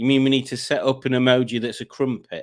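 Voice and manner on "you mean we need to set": ordinary delivery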